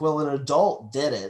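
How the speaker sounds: plain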